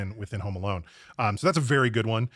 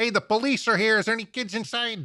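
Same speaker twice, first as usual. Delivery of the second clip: put-on Chicago accent, higher; 12 semitones higher than usual. Imagining a cop in the movie calling into the house: Chicago accent. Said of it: "in his Chicago accent".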